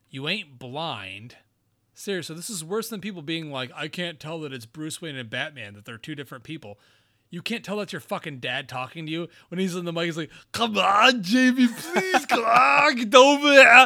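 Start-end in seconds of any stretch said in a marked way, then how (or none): 10.5-13.8 put-on booming, high Austrian accent, slow and drawn out. Speaker acts out a dad calling to his son Jamie, Arnold's Austrian accent. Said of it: "it's clearly your dad with the Austrian accent".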